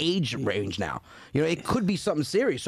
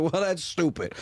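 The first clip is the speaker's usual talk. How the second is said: ordinary talk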